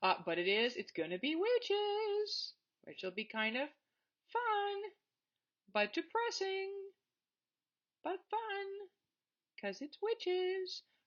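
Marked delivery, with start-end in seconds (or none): 1.2-10.8 voice pitched way up, climbing higher. A lecturer wraps up the first part of a lecture, high-pitched voice. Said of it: "I don't know why my voice got so high".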